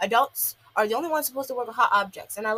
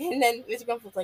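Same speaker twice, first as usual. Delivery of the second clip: ordinary talk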